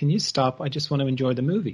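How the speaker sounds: plain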